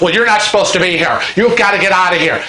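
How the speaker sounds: yelled voice. Retelling the officer's reply, still yelling at Kevin: imitating an officer yelling. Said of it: "he starts yelling at Kevin".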